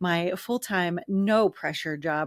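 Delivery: thick, heavy, dripping sarcasm. Describing a full-time job, very sarcastic. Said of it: "I say very sarcastically".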